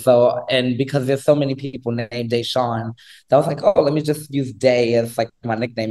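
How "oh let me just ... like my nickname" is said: normal talking voice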